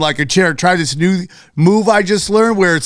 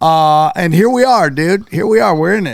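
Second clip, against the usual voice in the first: ordinary talk, nothing marked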